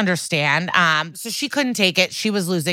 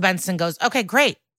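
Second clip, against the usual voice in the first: ordinary delivery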